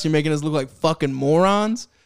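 ordinary delivery

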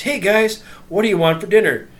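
high, loud, overly excited, hyped-up call. Babysitter retelling how they greeted the kids after daycare, mock overly excited voice. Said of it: "in an overly excited voice".

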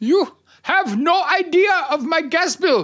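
put-on Punjabi accent, pitched very high. Playing Hitler in a role-play while told the accent still sounds Punjabi, Hitler impression with Punjabi accent. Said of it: "You're still sounding like Punjab".

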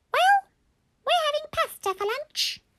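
extremely squeaky voice. Narrating a story, Mummy answers the question about lunch, very squeaky voice. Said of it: "albeit in a very squeaky tone".

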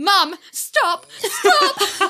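shrill, very high, very loud, freaked-out frantic begging. Retelling how Alistair reacted to the teasing: imitating Alistair freaking out. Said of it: "Alistair would freak out".

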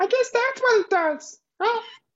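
very high-pitched puppet voice, done badly. Replaying a movie line as if said by Elmo: terrible Elmo impression. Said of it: "Sorry for my terrible Elmo impression".

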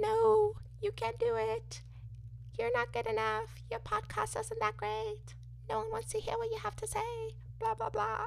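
very high, buzzing mosquito whine, tiny insect voice. A podcast host voices self-doubt as a mosquito buzzing in their ear: mosquito impression. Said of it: "Was that a good mosquito impression?".

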